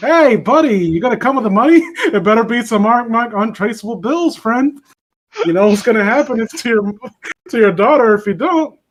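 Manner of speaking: put-on super friendly, sweet-as-pie yet menacing tone. Acting out a demand for money: imitating a super friendly threat. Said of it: "unironically sounds super friendly when he's threatening".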